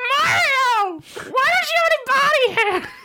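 tipsy, very high, very slow, drawn-out squeak. Telling a made-up story, a tipsy Toad questions Mario at Waluigi's Barbecue: drunk Toad voice. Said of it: "Is that a good Toad?".

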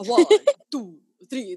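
swooping, sing-song vampire voice. Counting aloud like the Count from Sesame Street. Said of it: "That's the Count".

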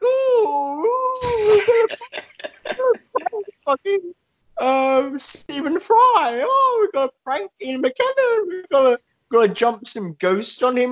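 very high, very slow drawl, "oh" stretched. Imagining a politician on a prank show: Boris Johnson impression. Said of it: "As Boris is like".

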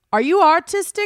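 put-on Long Island accent. Recounting meeting a woman at the door, the speaker quotes her in a thick Long Island accent. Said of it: "who has this like thick Long Island accent".

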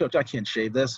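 ordinary delivery

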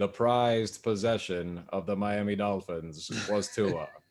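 slow, deliberate, weighty pronouncement. Joking about the prized possession of the team: John Facenda voice. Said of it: "why did I just have the John Facenda voice going".

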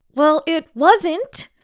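very high, loud yell through gritted teeth. Stuck in the last house of her deliveries, she answers back, yelled through gritted teeth. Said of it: "she yelled through gritted teeth".

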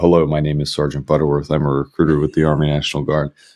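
mock very formal, robotic, flat monotone without personality. Retelling a first recruiting video: imitating own stiff formal delivery. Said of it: "very formal, you know, squared up to the camera".

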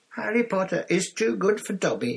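very high, squeaky little elf voice. Narrator reading Dobby's thanks for his present, squeaky Dobby voice. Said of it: "he squeaked".

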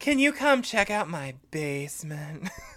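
mock-flirtatious, put-on flirty tone. Recapping a show's scene, voicing a character with a gas leak, mock-flirtatious voice. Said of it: "very flirtatious tone of voice".

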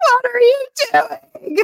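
very high shrieking, screaming outburst. Retelling his reaction to the lost magic, imitating someone screaming at a computer screen. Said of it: "he's screaming at the computer screen like".

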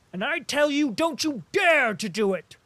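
very high, furious, hot-tempered yell. A man rushes at the cadet to restrain him, shouting loudly and angrily.

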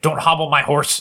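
forceful, aggressive tone. Telling the audience what to say to win a prize, aggressive. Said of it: "do you have to say it aggressively like that?".

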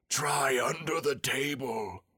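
slow, loud, carrying stage whisper. A storybook character suggests to the others where to look, in a loud whisper. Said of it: "said in a loud whisper".

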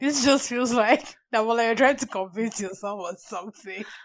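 talking through bursts of laughter. Teasing another speaker about convincing herself, laughing while talking. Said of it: "I'm sorry I'm laughing".

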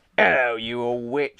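loud, nasty sneering voice. A customer greets the shopkeeper, sneering. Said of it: "he sneered".

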